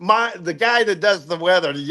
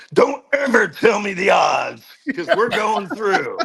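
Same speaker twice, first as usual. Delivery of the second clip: gruff, growling voice. Retelling a famous movie scene, growling Harrison Ford impression. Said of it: "he growls".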